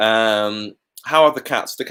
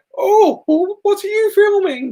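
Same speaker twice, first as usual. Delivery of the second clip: put-on very high, slow, gentle, sweet little-old-lady voice; 4 dB louder than usual. Recalling an old lady who stopped while you were filming; imitating an old lady. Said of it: "She sounded just like that. It's uncanny".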